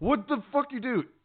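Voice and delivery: very high-pitched, shrill, loud yelling shout. Retelling a reaction to an anime scene: imitating own yelling. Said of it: "I was yelling at my T V".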